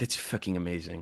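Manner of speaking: thrilled, delighted, gushing tone. Retelling Olivier's reaction to hearing a role was written for him: Olivier impression. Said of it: "that was a pretty good impression".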